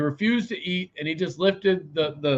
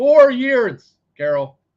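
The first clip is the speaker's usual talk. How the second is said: full-on, very loud, high yell; 9 semitones higher, 8 dB louder than usual. Passing on the guides' message to Carol, yelling. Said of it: "I'm sorry I'm yelling".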